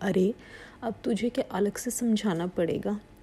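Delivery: ordinary delivery, nothing marked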